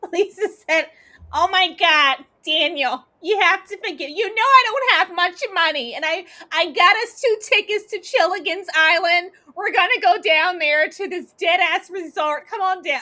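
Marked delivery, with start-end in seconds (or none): 1.3-13.0 grating, shrill, annoying, screeching nagging voice. Retelling what someone told them, in an annoying screeching voice. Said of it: "all of that annoying screeching ass voice".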